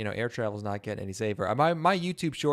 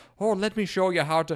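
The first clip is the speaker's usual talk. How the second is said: put-on nineteenth century Irish woodworker voice, higher, louder; 10 semitones higher, 5 dB louder than usual. Imitating a channel guy who larps as a nineteenth century Irish woodworker: imitating a larping Irish woodworker. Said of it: "larping as, like an Irish, like a nineteenth century woodworker".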